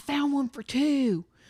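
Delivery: soft, hushed man's voice, under the breath. Retelling what a guy said, imitating the guy's voice. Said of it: "both did the voice like that".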